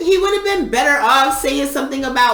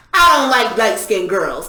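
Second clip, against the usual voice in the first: put-on intense man voice, lower; 3 semitones lower than usual. Retelling what a man at the bar said after staring: imitating an intense man. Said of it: "all intense".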